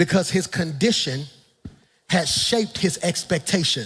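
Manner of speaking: slow, deliberate, spaced out word by word. Pastor gives the congregation a point slowly so they can write it: speaking slowly. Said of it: "I'm gonna say it slow so you can write it".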